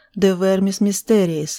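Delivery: ordinary delivery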